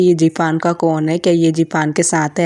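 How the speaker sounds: ordinary talk, nothing marked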